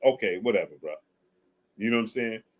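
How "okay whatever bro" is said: mock indifferent, passive, dismissive tone. Imitating a boxer brushing off his coach: imitating a passive brush-off. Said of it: "is a more passive".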